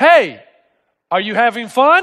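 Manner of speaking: slow, sarcastic, mock needling tone. Retelling how people from the house yelled at him in the water, mock-sarcastic. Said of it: "they said it kind of sarcastically".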